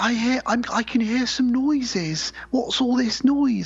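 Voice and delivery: put-on British accent, very high and drawn out. Retelling a film scene, voicing the British girl hearing noises downstairs, British accent. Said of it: "That's my British accent".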